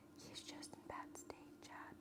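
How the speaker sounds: very quiet hushed whisper, full of worry. Speaker addresses a listener out of worry, whispering. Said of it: "I'm whispering because I'm worried for him".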